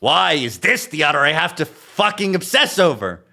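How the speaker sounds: high-pitched, loud exasperated outburst. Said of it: "Leo's exasperated sigh".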